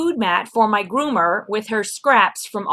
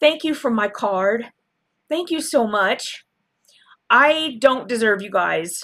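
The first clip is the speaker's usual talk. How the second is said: voice on the verge of tears. Speaker thanks Lori for a card, close to tears. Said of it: "I don't want to start crying".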